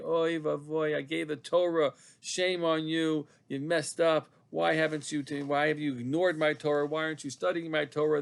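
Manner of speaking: put-on mournful, grieving, sorrowful voice. Explaining a Torah teaching, voicing the heavenly voice from Sinai, mock-sad and grieving. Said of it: "that's the the sad voice, grieving".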